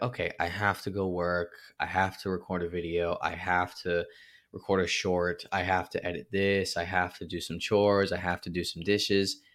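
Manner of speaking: mock weary, burdened, flat, tired delivery. Retelling own morning list of daily tasks: imitating own tired, burdened tone. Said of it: "in that tone that I was using".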